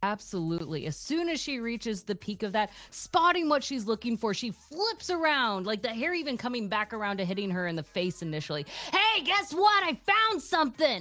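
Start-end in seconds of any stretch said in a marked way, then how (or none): 8.9-11.0 intense, high, loud, scratchy scream. Voicing a character calling to her party from a hilltop: screaming. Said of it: "And she just screams it".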